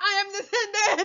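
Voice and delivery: acted, grand, high screaming shout. Mocking a screaming lecturer's claim: mocking Umar Johnson screaming. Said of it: "He just screams".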